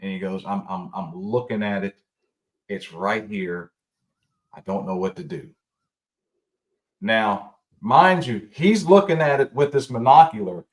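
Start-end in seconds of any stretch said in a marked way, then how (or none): 0.5-5.5 low, trembling, quavering acted murmur. Speaker retelling a man's radio call from outside camp, imitating a quivering voice. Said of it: "his voice is quivering".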